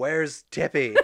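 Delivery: put-on loud, demanding, drunken holler. Imagining showing up late to a birthday party: pretend drunk screaming. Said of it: "drunk, just screaming".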